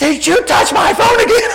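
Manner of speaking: high, loud yell rising toward the end. Retelling her reaction after he plugged her phone back in; retelling her yell. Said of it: "yell at the top of her lungs".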